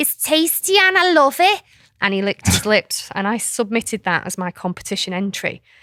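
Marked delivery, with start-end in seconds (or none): 0.0-1.6 put-on very thick Scouse accent in a high toddler voice. Retelling the speaker's toddler in a competition video drinking green juice: thick Scouse accent. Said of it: "in his very thick Scouse accent says".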